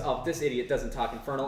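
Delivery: ordinary talk, nothing marked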